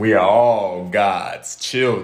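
put-on movie-trailer announcer voice. Agreeing on the name 'the Besties' in conversation, in a movie guy voice. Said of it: "Why you got to put that voice on every time?".

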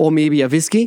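ordinary talk, nothing marked

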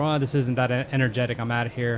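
ordinary talk, nothing marked

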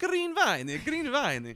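very high, halting, slow Italian woman voice. Retelling what an Italian woman told them, in an Italian voice. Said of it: "I can do a voice".

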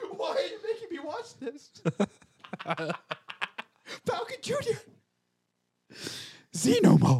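very high, frightened, fearful cry. Playing a person in fear with wolves outside the door, fearful. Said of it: "Fearful. The wolves are outside your door".

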